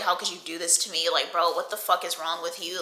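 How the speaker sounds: put-on tearful crying voice. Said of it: "I'm just, like, crying".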